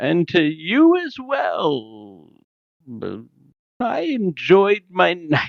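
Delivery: mock drunk slurring, very slow and high-pitched. Retelling someone's slurred reply to a message: imitating drunk slurring. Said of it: "he's slurring as he's responding".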